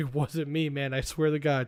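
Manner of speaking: usual speaking voice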